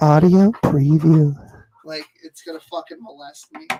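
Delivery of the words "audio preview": very loud, seductive female voice. Imitating the music's audio preview tag: imitating a seductive woman's voice. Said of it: "like a seductive woman's voice".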